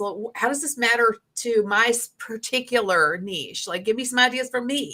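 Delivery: ordinary talk, nothing marked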